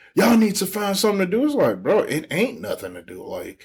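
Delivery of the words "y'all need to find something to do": mock yelling, high-pitched and scolding. Retelling how she yelled at idle staff: imitating someone yelling. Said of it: "she'll be yelling like".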